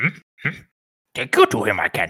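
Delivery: swooping, sing-song character voice, pitch swooping around. Giving a full Yoda when asked by the other speaker: Yoda voice. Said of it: "That's how I have to get into Yoda".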